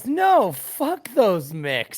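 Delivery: put-on, very drawn-out, slow, furious outburst. Imitating how Marsh reacts to a question about the Irish: imitating Marsh really mad. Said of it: "Really mad".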